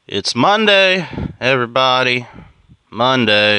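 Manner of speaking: drawn out, dead flat, unexcited and sarcastic. Greeting everybody at the start of the week on a monday: sarcastic, unexcited. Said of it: "Can you hear the excitement in my voice?".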